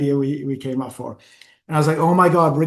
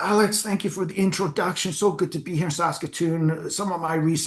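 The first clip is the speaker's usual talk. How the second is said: bad, failed put-on German accent; 2 semitones higher, 6 dB quieter than usual. Retelling a speech given in character on stage: bad German accent. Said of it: "I can't do a German accent".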